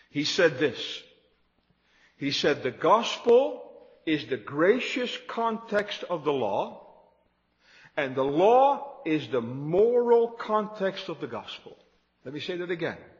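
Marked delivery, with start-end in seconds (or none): 2.6-11.8 slow, measured, deliberate, word by word, "law" drawn out. A speaker quoting Sinclair Ferguson's statement to listeners, said slowly. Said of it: "but I'll say it slowly".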